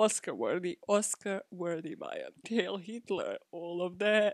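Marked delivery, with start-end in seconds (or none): 2.5-4.3 put-on thick Eastern European accent. Repeating a quoted phrase in a completely eastern european accent. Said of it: "like in a completely Eastern European accent".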